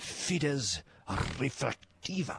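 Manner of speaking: Latin words spoken in a Spanish accent. Repeating a Latin term after proposing to say Latin that way: Spanish accent. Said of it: "we should probably pronounce it with a Spanish accent".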